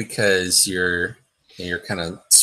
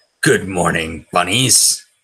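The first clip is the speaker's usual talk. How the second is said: voice of the devil, in character. Voicing the devil, who looks right at the bunnies: devil voice. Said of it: "the voice of the devil say".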